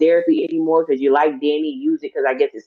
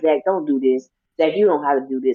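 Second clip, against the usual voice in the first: mock desperate, begging, pleading tone. Retelling how she begged him not to break the vase: imitating someone begging. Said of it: "And she was begging".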